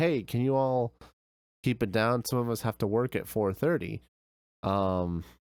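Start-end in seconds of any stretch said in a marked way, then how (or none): none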